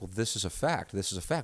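calm, even, unraised, matter-of-fact tone. Retelling how they argue with their wife: imitating calm, not-screaming arguing. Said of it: "I talk like this in an argument".

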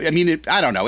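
ordinary talk, nothing marked

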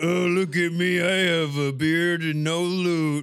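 loud, mocking, laid-on put-on voice. Teasing how Ben always talks, the speaker is mocking Ben's voice. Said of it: "Ben always talks like this".

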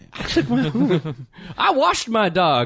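slow, drawn-out mock bragging voice.

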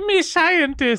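put-on, funny, very high, loud Chinese accent. Speaker joining a bit about someone posing as a scientist; funny chinese accent. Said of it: "you just use a funny Chinese accent".

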